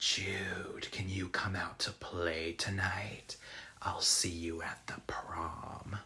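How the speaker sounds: very quiet, hushed, eerie and creepy voice. Recapping a film, quoting the voice on the phone: retelling a creepy voice. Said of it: "this creepy voice says".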